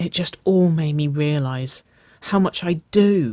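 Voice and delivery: breathed. Waverly answers Nicole, her hand falling back into Nicole's, breathed. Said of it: "Waverly breathed".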